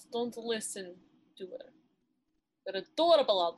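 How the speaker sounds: thick, put-on Russian accent, dropped in abruptly. Reassuring Alante after someone says he isn't the cutest: sudden Russian accent. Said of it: "I just went into fucking Russian accent".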